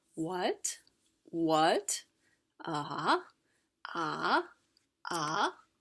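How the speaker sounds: "what" climbing from low to high pitch. Teaching the second tone using an English question, rising question intonation. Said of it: "you will start very low and move on to very high".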